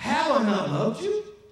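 put-on hurt, wounded, pleading tone. Acting out god speaking to his people, with attitude. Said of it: "you gotta get the attitude here with God".

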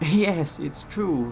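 loud, laughing, spoken through a laugh. The old engine answers surprised Boco, laughing. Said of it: "laughed the engine".

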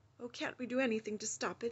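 shaken, rattled, unsteady, unsettled voice. Reading a story aloud, giving a character's line in a shaken voice. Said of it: "said Jill in a shaken voice".

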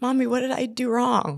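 mock very high, bawling, sobbing little girl's crying voice. Retelling a daughter's question after relatives ignored her: imitating a bawling child. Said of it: "was just bawling".

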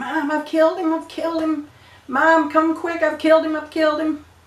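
frantic, high, panicked yelling. Retelling scrambling down a ladder calling Mom: imitating own past yelling. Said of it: "was yelling".

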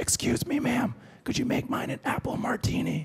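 soft, hushed whisper. Retell a man grabbing the waitress to place his order, imitating someone whispering. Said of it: "[WHISPERING VOICE]".

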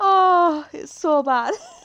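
very slow, high, loud speech through laughter. Reacting to a chat message, laughing while talking. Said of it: "It's all the laughing".

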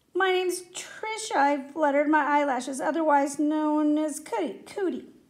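ordinary talk

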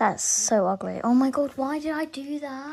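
slow, exasperated, annoyed self-reproaching delivery. Reacting on camera right after a choice just made: annoyed at oneself. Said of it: "I'm actually really annoyed at myself".

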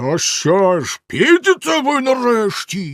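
enraged, furious roaring bellow, high and loud. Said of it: "розлючено загорлав знизу синя борода".

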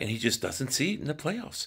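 hushed, subdued, very quiet, breathy, low near-whisper. Imitating a sports commentator saying it quietly: imitating Stephen A Smith speaking low. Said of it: "said it in such a low, low voice".

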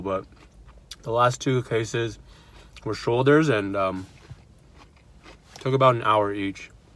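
speaking with mouth full, chewing. Vlogging about a surgery rotation while eating: talking with mouth full. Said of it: "I'm talking with my mouth full".

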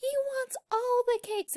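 play-acted very high, giddy burst of excitement, shrieking. Retelling a cartoon scene, quoting Pinkie Pie: imitating excited Pinkie Pie. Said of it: "she was so excited".

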